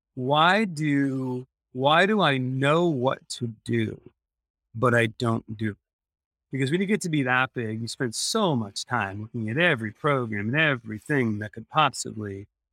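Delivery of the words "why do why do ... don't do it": usual speaking voice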